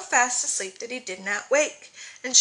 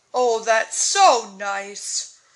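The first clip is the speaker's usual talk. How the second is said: very slow, loud, drawn-out relieved sigh; 5 dB louder than usual. Narrating Dan as the owl puts wet bandages on him: sighing. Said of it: "sighed Dan".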